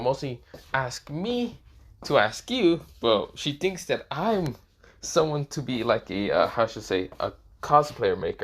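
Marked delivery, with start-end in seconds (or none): none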